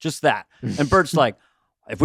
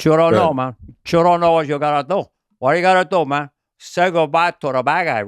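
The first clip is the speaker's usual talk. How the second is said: exaggerated, heavily laid-on Cuban accent. Talking to Bill about favorite performances, doing Al Pacino's Scarface Cuban accent. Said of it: "he extenuated his Cuban accent in Scarface".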